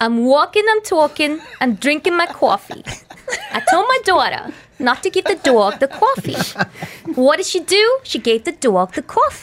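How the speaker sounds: attempted New York accent, high and swooping. Asked for a demo, showing off the new york accent being learned. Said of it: "trying to learn the New York accent".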